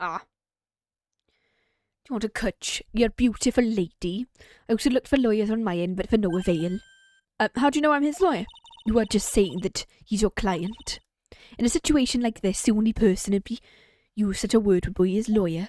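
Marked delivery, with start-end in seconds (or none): 0.2-6.8 attempted, put-on Welsh accent. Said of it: "I can't do Welsh".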